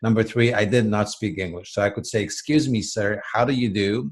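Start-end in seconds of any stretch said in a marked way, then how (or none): 2.2-4.1 put-on correct, proper, textbook British accent. Recalling arriving from Poland without English, the speaker quotes their stock phrase in a proper British accent. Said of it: "Proper British accent".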